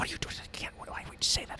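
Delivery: barely audible, very quiet, breathy hushed whisper. Narrator voicing someone heard from down below, whispering. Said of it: "It's like whisper".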